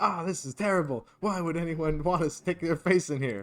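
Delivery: shouting in a put-on voice. Voicing a character stuck in a crowd: in-character yelling. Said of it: "I'm in here for six seconds yelling".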